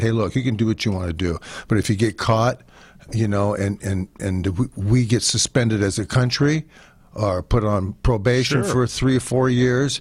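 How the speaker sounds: normal talking voice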